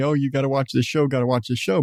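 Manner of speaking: ordinary delivery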